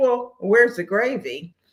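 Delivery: ordinary delivery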